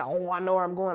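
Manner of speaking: ordinary delivery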